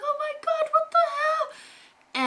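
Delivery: very high-pitched, drawn-out, freaked-out panicked scream. Speaker retells how they reacted on finding her, retelling panicked screaming. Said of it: "we're like screaming like".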